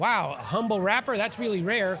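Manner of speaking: ordinary talk, nothing marked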